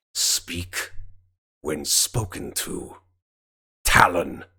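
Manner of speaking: growled, rebuking tone. Voicing a woman in a role-play scene rebuking Talon, growling. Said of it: "she growls it in your direction".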